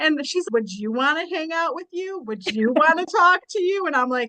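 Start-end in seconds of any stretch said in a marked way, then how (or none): 0.5-3.9 repetitive scolding, nagging voice. Retelling a psychologist's impression of a mother: imitating a nagging mother. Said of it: "And she's doing this impression".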